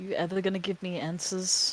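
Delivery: barely-there, gentle, very soft and hushed voice. Voicing a character in a game asking an entity for answers: very soft voice. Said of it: "very, very softly say".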